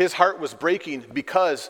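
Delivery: plain reading voice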